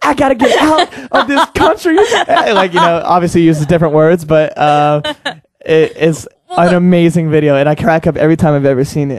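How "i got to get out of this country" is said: mock very high, very upset lamenting tone. Retelling a news reporter's reaction to a bug flying into his mouth, imitating him upset. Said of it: "he's just like so upset".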